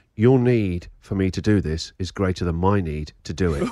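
put-on calm, composed, very low voice. Quoting what their 14-year-old said to them, retelling a calm remark. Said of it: "calmly said".

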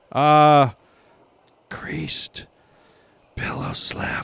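hushed, slow whispering. Asked by the man called sir to say it slowly and whisper it, a slow whisper. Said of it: "Say it slowly and whisper it".

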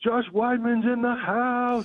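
play-acted yell, very high and drawn-out. Retelling a greeting from a car rental worker: imitating someone yelling. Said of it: "And he starts yelling this".

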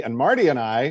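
Marty stressed with a rising pitch. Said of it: "yes, emphasis on Marty".

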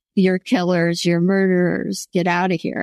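ordinary delivery

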